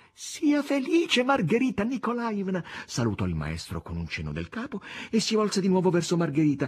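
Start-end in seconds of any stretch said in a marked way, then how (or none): 0.2-2.7 very high, ringing shout. Natascia bursts through the open door, claps her hands and calls to margherita, shouting. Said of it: "Batté le mani e gridò a Margherita".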